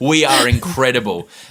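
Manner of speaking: boastful, totally confident, cocky delivery. Recalling how the group presented their writing, faking 1,000% confidence. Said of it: "with 1,000% confidence and go".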